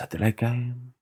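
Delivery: put-on Japanese accent, laid on, high and soft. A speaker imagining a man saying a quote, in a mock Japanese accent. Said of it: "saying it in Japanese voice".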